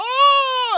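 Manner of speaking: high, loud frightened crying wail. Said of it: "and is, like, crying".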